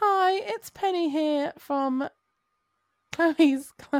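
put-on older woman voice. Asked by the others to do her mom's voice, imitating her mom's voice. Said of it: "Can you do your mom's voice right now".

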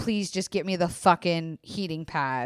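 mock angry, put-on angry tone. Giving advice about partners, imitating a partner asking in an angry voice. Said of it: "can your partner say in an angry voice".

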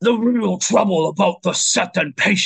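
loud, high-pitched, guttural demon accent. Trying out a voice for reading a demon's letter: guttural demon accent. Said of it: "like a nice guttural demon accent".

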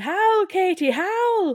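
deliberately bad Irish accent, very high, shrill and loud. Retelling what the tour group called to a hotel worker, in a bad put-on accent. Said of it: "this accent is not going to be good".

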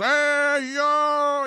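very high, loud, belted wrestler-style call. Describing what a wrestler seemed like as a kid: Jim Duggan impression, tongue out. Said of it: "the guy who sticks his tongue out of the side of his mouth and goes".

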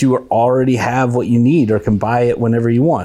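ordinary talk, nothing marked

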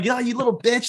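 acted-out, high-pitched, promo-style yelling. Describing Ace's promo, acting out him yelling at his little kid: mock yelling. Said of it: "he's like yelling at his little kid".

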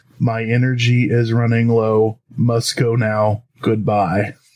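low, flat, toneless robotic monotone. Reading a UFO report about a man leaving a researcher, flat monotone voice. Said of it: "monotone voice".

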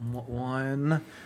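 mock mutter under breath. Retelling a character ordering at the store: imitating Kaiji muttering under his breath. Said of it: "mutters under his breath".

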